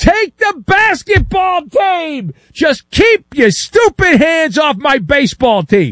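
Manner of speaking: high, slow, desperate scream at the top of the lungs.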